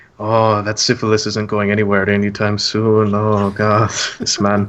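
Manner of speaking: snickering, wry, muttered aside. As he walks out the door, your character says it: muttered under breath. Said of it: "under my breath, I mutter".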